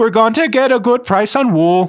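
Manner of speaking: put-on very high, goofy, dumb-sounding Swedish accent. Mocking how swedish people talk, in a dumb swedish accent. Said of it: "just in their dumb Swedish accent".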